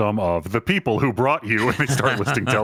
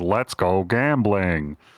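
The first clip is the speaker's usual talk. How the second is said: low, robotic computer announcer voice; 4 semitones lower than usual. Describing pulling a slot machine's lever, imitating a computer voice. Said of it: "a computer voice goes".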